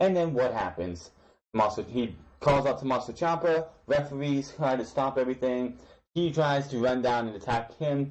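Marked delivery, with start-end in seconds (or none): none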